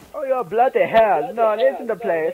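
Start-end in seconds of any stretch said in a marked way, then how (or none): 0.1-1.3 terrible, clumsy fake British accent. Speaker attempting a british accent on stream, bad british accent. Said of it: "impersonation of a British accent sucks".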